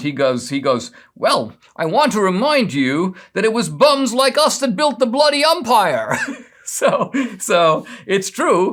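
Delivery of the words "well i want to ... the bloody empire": high-pitched, indignant tone. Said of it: "who gets very indignant".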